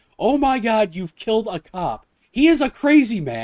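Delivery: high, slow, dragged-out yelling. Retelling a scene, speaker voices the roommate yelling at him, imitating her yelling. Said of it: "she's yelling at him like".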